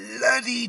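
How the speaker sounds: "bloody" stretched way out, long and drawn-out. Among kids and parents, the speaker imitates their mum with a drawn-out 'bloody'. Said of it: "the way she said bloody, she really drew".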